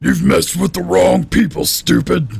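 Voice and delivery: creaky, rough, high, dim-witted brute creature voice. Voicing the Vesk enemy taunting the players: loud Vesk voice. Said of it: "He's loud".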